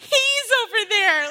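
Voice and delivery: very loud, full-voiced, blurted yell. Retelling blurting out loud in a theater, retelling own yell. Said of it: "I yelled".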